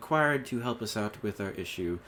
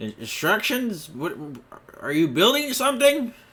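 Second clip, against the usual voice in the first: put-on confused dwarf voice, much higher pitch; 10 semitones higher, 9 dB louder than usual. Voicing a dwarf as the party arrives offering help, a bewildered dwarf voice. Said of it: "is that dwarven fellow that you saw earlier that she had mentioned too. / As he looks and sees all of you walking in".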